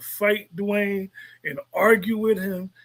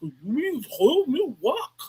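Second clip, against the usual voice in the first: high, very slow drawl, every word drawn out; 5 semitones higher than usual. Describing an actor's way of playing a character, imitating the Kanan voice. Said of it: "the way he does that Kanan voice".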